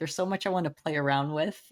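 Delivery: ordinary delivery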